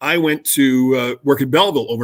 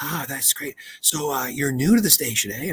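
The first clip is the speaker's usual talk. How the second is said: put-on woman's whisper, quieter; 6 dB quieter than usual. Retelling a late-night phone call from a woman: imitating a woman whispering. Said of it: "this woman is whispering".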